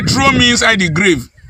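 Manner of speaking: ordinary talk, nothing marked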